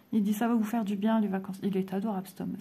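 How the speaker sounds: ordinary delivery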